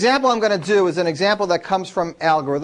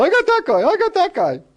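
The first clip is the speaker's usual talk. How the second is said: put-on giddy kid voice, very high, rapid, excited cheering; 11 semitones higher than usual. Retelling what sixth graders shout in chalk flake races: imitating excited kids. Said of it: "they get real excited when their flake wins".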